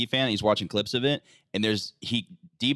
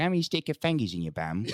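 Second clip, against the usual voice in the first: put-on cockney accent, creepy, leering voice; 2 semitones higher than usual. Doing a silly voice for friends: Cockney pervert voice. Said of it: "the Cockney pervert one".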